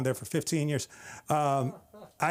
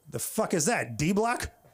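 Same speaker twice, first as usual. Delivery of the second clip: normal talking voice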